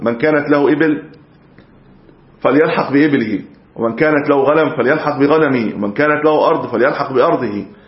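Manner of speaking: ordinary talk, nothing marked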